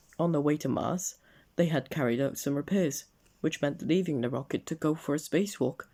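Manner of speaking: plain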